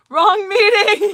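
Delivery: very loud, shrill, high, booming yell. Retelling a friend's outburst at a work meeting: imitating a friend yelling. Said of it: "my friend who was in recovery yells".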